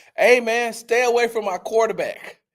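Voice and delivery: acted out shrill, very high screaming yell. Retelling what the coach yelled at a player: imitating a coach screaming. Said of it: "Coach DeMeco Ryan screamed out".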